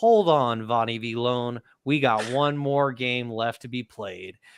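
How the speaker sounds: ordinary talk, nothing marked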